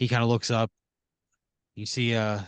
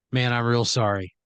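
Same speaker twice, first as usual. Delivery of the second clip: ordinary talk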